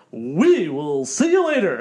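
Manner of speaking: loud, swooping, nerdy radio announcer voice. Showing what Chris's radio voice sounded like, imitating Chris's radio voice. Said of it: "let me do Chris's radio voice".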